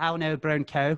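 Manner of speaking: put-on Northern Irish accent. Trying the phrase people say is easy in the accent, Northern Irish accent. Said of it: "so easy to say in an Northern Irish accent".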